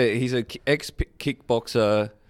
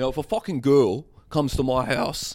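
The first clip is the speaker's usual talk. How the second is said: put-on South African accent; 3 semitones higher than usual. Describing a man whose accent keeps shifting, imitating South African accent. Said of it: "now it's South African".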